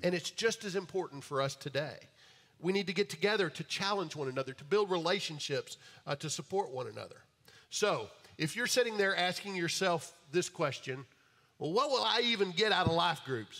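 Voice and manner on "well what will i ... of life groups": put-on East Texas accent. Voicing a question someone might ask: voice like the guy in East Texas. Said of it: "said it like the guy that was in East Texas".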